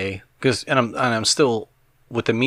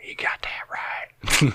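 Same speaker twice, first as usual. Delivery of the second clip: faint southern twang, slow, breathy, hushed whisper; 5 semitones higher than usual. Imitating what an odd recorded voice seems to say: imitating a southern twang. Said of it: "a southern twang to it a little bit".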